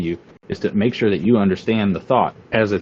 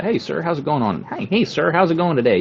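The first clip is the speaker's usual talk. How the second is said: pitched-up proper office voice; 8 semitones higher than usual. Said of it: "you got to pull out that ca- that Caucasoid voice".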